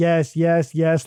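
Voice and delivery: robotic, mechanical puppet-like repetition. Describing a decoy answering on repeat, say it in a mechanical puppet voice. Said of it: "like a mechanical puppet".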